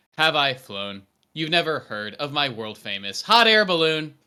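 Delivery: loud, even, straight read with no acting. Reading a character's line as the director asks, in a monotone reading. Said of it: "you can read it pretty monotone".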